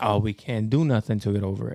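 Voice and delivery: plain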